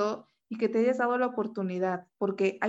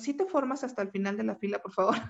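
usual speaking voice

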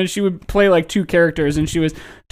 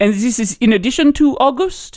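affected, put-on French accent; 4 semitones higher than usual. Retelling a TikTok skit, the French recipient asks: imitating a French accent. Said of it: "an affected, like, a French accent".

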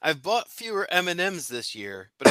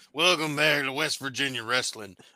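big, put-on pro-wrestling promo announcer delivery; 3 semitones lower, 6 dB quieter than usual. Joking around, doing a put-on wrestler voice. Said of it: "Sound like a wrestler".

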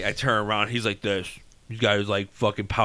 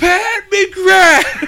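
put-on child screaming, higher and louder; 11 dB louder than usual. Retelling how a kid pointed and called a name: imitating a kid screaming. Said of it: "screaming as loud as he can".

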